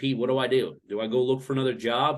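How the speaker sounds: usual speaking voice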